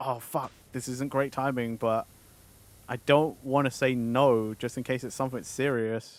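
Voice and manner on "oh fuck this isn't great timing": mock-panicked, mildly frantic tone. Retelling their own reaction to being asked for a minute, freaking out. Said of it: "I started freaking out a little bit".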